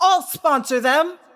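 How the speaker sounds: abrupt, very high, shrill, acted-out outburst. Retelling a scene where one of the cat-faced twins abruptly stands, retelling a sudden yell. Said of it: "abruptly gets to her feet and yells".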